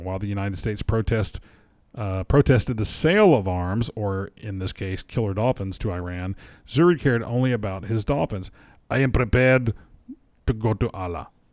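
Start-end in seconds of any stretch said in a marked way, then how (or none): 8.9-11.3 put-on Russian accent. Quoting a man in a news story: put-on russian accent. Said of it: "this guy was Russian a minute ago".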